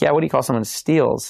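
ordinary talk, nothing marked

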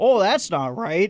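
put-on heavy New England accent. Retelling a coworker's reply on a night phone call: imitating Dwight's thick New England accent. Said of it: "that thick New England accent".

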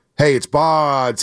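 long, slow stretched-out call. Retelling how he announced himself at the neighbor's door as a kid, long and slow. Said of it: "I would say it so long and slow".

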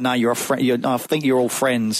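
ordinary delivery

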